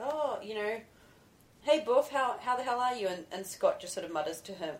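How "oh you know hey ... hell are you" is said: half-yelled, high, offhand call. Retelling a funny movie scene where a character yells from a car: imitating someone yelling. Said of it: "he kinda yells out something like".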